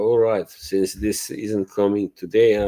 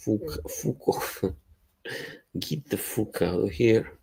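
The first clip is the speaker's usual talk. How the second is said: fake Scottish accent, quieter; 7 dB quieter than usual. Talking like a Scottish person for a joke: put-on Scottish accent. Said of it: "Now I'm gonna talk like a Scottish person".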